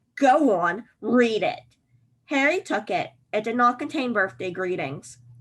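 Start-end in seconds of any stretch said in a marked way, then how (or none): 0.2-1.6 very drawn-out, slow, menacing evil hiss. An uncle advances on the boy, brandishing a letter, with an evil hiss. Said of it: "he hissed evilly".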